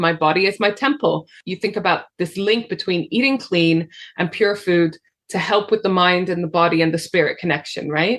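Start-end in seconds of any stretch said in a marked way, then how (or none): none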